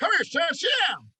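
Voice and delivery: put-on high-pitched, loud Tennessee country accent. Recalling a drill sergeant mentor calling him over, imitating Sergeant Higgs. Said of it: "he talked like this".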